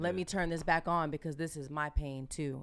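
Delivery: ordinary talk, nothing marked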